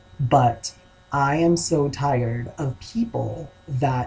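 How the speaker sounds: very slow speech, each word carefully chosen.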